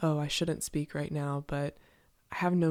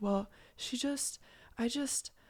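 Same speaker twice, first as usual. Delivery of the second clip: put-on soft, high, hurt, sheepish little boy voice; 8 semitones higher, 5 dB quieter than usual. Acting out how a man talks after a breakup: mock-wounded little boy, soft voice. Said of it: "injured little boy, head downturned, voice soft".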